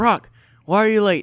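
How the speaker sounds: very loud, high-pitched, scolding shout. Retelling an instructor scolding a late kid, imitating him yelling. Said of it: "he's like yelling at this little kid".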